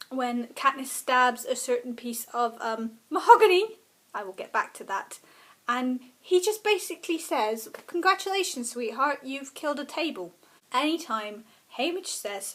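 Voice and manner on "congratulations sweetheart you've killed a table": dry, sardonic, heavily sarcastic tone. Quoting a favourite Hunger Games moment: sarcastic, as Haymitch. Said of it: "his most sarcastic moments".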